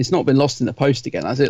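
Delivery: ordinary talk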